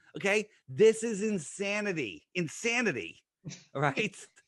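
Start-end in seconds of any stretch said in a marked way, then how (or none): 0.6-3.2 passionate, fervent, emphatic delivery. Reacting to a space fact in conversation: passionate emphasis. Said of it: "say it with so much passion".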